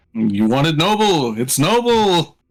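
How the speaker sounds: put-on voice with Yiddish-sounding accent. Voicing an old dragon answering a player: Yiddish accent. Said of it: "Why did you sound Yiddish?".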